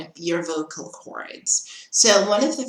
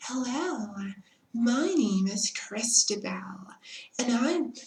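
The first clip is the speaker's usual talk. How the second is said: very soft, high, meek, subdued voice; 6 semitones higher, 5 dB quieter than usual. Recalling how the speaker once talked when starting out, very soft, subdued voice. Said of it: "I would speak like that in a very soft and subdued voice".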